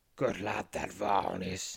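grumbling. Forcing a smile, a man speaks, grumbling. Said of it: "he grumbles".

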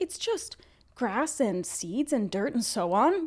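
creepy, slowly stretched delivery. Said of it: "That's the line".

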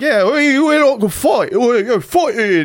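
very high, slow, fuzzy, vague fake Australian accent. Describing people who like to fight, mimicking them in an unclear put-on accent. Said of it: "I don't know what accent I'm doing".

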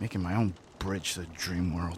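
low mutter, half under the breath. Retelling Para walking out past Zion, muttering under his breath. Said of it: "under his breath".

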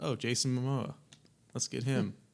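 ordinary delivery

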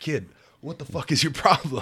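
high-pitched, angry, play-acted yelling. Retelling the coach yelling about skipped practice: imitating coach yelling. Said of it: "'cause he's yelling at me".

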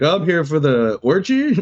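very slow, drawn-out delivery. Acting out a silly scene: playing a pizza guy who shows up. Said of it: "Then a pizza guy shows up. He's like".

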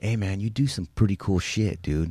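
imitated, put-on whisper. Retelling what a guitar player whispered in his ear: imitating a whisper. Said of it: "and he whispers in my ear".

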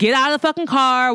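high, mild, toned-down yell. Retelling officers' orders to a man in a vehicle: imitating officers screaming. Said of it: "they keep screaming at him to get out".

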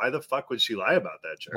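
ordinary talk

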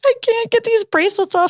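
very high, frustrated, tearful crying. Retelling what the upset lady said, imitating her frustrated crying. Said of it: "frustrated and crying".

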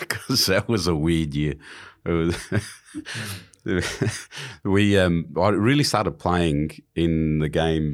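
speaking through laughter, very slow and drawn-out. A speaker asked why they're laughing answers, laughing while talking. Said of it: "Why are you laughing?".

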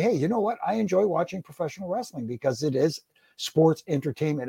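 normal talking voice

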